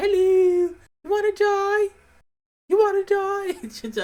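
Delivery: very high, loud, slow, drawn-out voice. Trying to do Ross Kemp for a friend, a high-pitched Ross Kemp impression. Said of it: "I don't know why he's high pitched".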